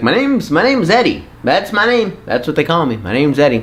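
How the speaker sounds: talking like a little puppet. Retelling telling a man his name at Christmas as a child, talking like a puppet. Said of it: "I don't know why I talked like a puppet".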